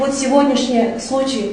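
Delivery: plain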